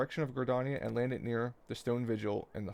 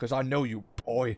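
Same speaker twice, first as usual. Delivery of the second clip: angry tone; 5 dB louder than usual. Repeating a line just read aloud: mock-angry line reading. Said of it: "He said it like he's mad".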